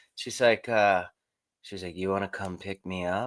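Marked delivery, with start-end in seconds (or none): 2.0-3.3 mimicked super sexy voice, lower and quieter. Retelling her call asking to be picked up: imitating a super sexy voice. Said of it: "That was just super sexy voice".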